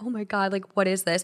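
acted terrified reaction. Retelling a moment at sixteen, imitating own terrified reaction.

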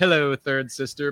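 loud, high-pitched, sassy voice. Imagining a villain walking in and greeting someone: imitating the Grand Inquisitor, sassy. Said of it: "I'm imagining his very, like, confident, sassy walk in".

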